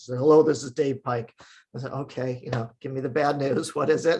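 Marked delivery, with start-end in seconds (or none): 0.2-1.3 put-on, very serious mock journalist voice. Retell a journalist's phone call that came while you made breakfast, imitating a very serious voice. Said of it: "in a very serious voice".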